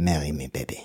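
French-accented voice. Suggesting a proposal line at a Paris jazz bar: French accent. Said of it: "in a French accent".

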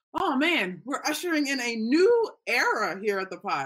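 voice cracking. Podcast host opening a new episode of the show, voice cracking. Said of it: "my voice just cracked like that".

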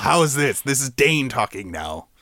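put-on pirate voice. Podcast host tries out a pirate impression for the co-hosts, pirate accent. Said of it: "How's my pirate impression".

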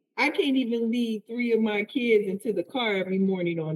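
ordinary delivery

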